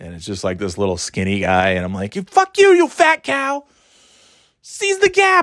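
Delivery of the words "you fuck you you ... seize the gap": yelling in a very high register. Retelling yelling at drivers in traffic: imitating own yelling. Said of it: "I'm just yelling".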